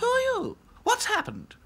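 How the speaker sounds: startled, very high, swooping, alarmed cry. Dolls question a doll who rushed in begging for help, alarmed. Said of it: "Asked the dolls in alarm".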